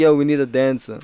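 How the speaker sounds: ordinary talk, nothing marked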